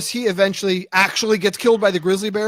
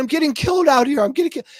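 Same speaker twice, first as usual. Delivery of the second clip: put-on yelling and crying, voice cracking, higher; 6 semitones higher than usual. Retelling a recording of a man attacked by a bear: imitating yelling and crying, voice cracking. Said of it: "his voice is cracking".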